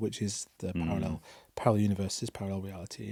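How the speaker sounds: hushed half-whisper under the breath, to himself. Retelling what Hartmut said at the end: imitating Hartmut half-whispering to himself. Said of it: "he sort of whispers to himself".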